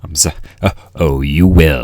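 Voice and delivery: put-on deep voice. Showing off a voice to friends who say they love it: deep voice. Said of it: "This deep voice, I love it".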